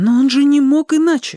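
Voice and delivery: with conviction. She answers Startsev about Pashka, with conviction. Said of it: "убежденно сказала она".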